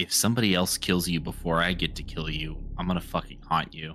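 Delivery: hushed, threatening whisper. Playing a character who whispers to a monster: whispering a threat. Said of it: "I'm gonna whisper to him".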